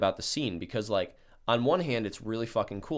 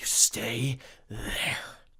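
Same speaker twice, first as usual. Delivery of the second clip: put-on weird raspy voice, slower pace. Retelling how he backed out of the car and looked at him, imitating John's weird raspy voice. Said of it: "talking in this weird raspy voice".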